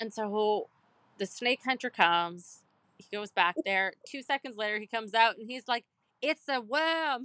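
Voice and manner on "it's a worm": very bad, pitched-up put-on Australian accent. Retelling what a snake hunter said after checking: bad Australian accent. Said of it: "that was the worst Australian accent ever".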